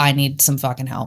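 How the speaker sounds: ordinary talk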